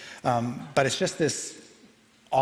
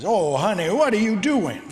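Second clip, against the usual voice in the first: talking portrait voice, high and sing-song; 8 semitones higher, 7 dB louder than usual. Voicing a portrait that animates as a player slices it: animated portrait voice. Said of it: "That's good".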